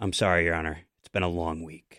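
mock grand, dramatic, theatrical stage-style delivery. Retelling a lawyer's reply to a judge in court: imitating someone speaking dramatically. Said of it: "so dramatically goes".

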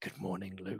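very low, very quiet, flat, unenthused voice. Show the other speaker how their good morning to luke sounded, imitating a not very uplifted greeting. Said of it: "it sounded like you were like".

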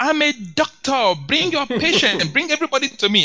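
high, loud street-hawker shout. Picturing a doctor who comes to a community chasing patients, imitating a screaming doctor. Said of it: "he's screaming".

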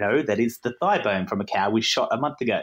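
plain

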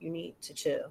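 acted quiet whisper. Retelling whispering to a woman to get her to lower her voice; retelling a low whisper. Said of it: "And I whisper real low".

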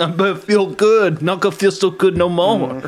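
taunting, loud, high put-on Brooklyn accent. Answering a question about being one of the beautiful people: Brooklyn accent.

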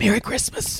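soft, quiet mutter. Retelling mom walking into the kitchen: imitating mom saying it quietly. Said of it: "I hear her quietly say".

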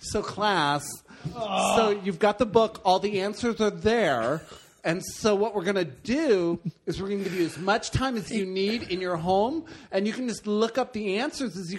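put-on high, effeminate teacher voice.

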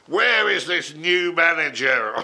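big booming voice. Recalling first meeting Tony Wilson, the speaker quotes him in Tony Wilson's big voice. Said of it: "in this big voice going".

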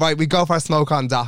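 ordinary talk

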